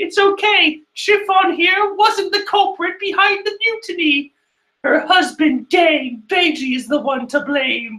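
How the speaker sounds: silly cartoon voice, pitched very high. Recapping a chapter, voicing a character's line as Téa from Yu-Gi-Oh! Abridged. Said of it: "I need to give her a silly voice".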